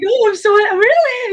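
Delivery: very high, all-excited outburst, acted out. Retelling the owner's reaction when told his dog Pokey was here, mock excited. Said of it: "he was all excited".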